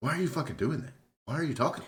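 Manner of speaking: very high, shrill, loud, furious outburst. Retelling a show scene where he blows up at a barista, imitating an angry outburst. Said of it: "he just blows the fuck and, like, goes in".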